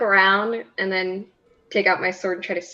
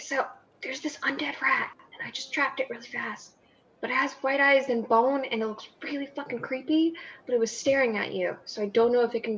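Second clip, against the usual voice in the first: hushed whisper, quieter and higher; 4 semitones higher, 7 dB quieter than usual. Not wanting anyone nearby to look over, the speaker briefs the group: whispering. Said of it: "I'm gonna kind of like whisper".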